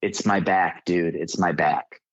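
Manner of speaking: put-on crying, sobbing voice. Retelling what the hurt guy said, imitating someone crying. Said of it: "he's crying and he's going".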